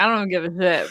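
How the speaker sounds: normal talking voice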